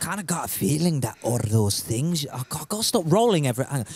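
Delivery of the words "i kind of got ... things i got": put-on Scottish accent with a veiled, menacing tone. Playing a scottish character threatening strangers met in the game: put-on scottish accent, threatening. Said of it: "I'll be Scottish and I'm gonna threaten everyone".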